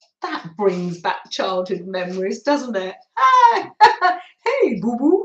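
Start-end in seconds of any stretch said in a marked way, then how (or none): 3.2-5.3 drawn out, big and loud delivery. Speaker recalls a childhood cartoon and does a Yogi Bear impression. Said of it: "I used to be able to do a little impression of Yogi Bear".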